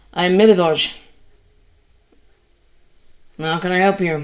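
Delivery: grudging, put-out tone with a little huff. Voicing a gravedigger annoyed at losing time: huffy, put-out reply. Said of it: "with a little bit of a huff".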